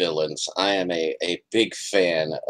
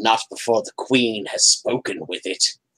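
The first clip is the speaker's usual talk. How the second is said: little chittering spider creature voice; 4 semitones higher than usual. A storyteller voices one of the spiders answering another, chittery spider voice. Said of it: "their little chittery spider voices".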